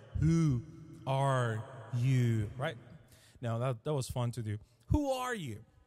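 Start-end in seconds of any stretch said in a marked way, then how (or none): 0.2-2.5 voice with a huge echo effect. Asking listeners a question one morning, repeating it: with a large echo. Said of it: "Let me say it with a large echo".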